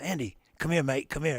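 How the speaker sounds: bad put-on Australian accent, calling out. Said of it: "That's the worst [name] impression".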